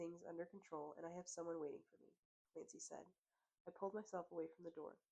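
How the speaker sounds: ordinary delivery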